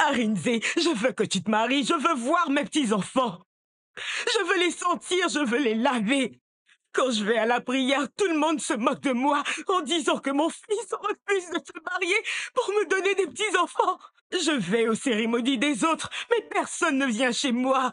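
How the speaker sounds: weeping, in tears, pleading tone. A mother begs her son arinze to marry and give her grandchildren, crying. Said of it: "arrête de pleurer".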